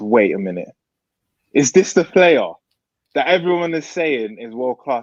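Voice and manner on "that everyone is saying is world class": ordinary talk, nothing marked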